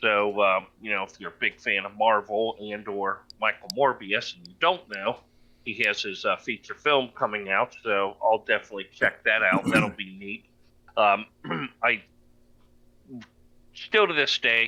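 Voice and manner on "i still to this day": halting, stumbling, stuttering, searching for words. Talking about Marvel films while searching for the words, speak stuttering. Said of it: "I'm stuttering".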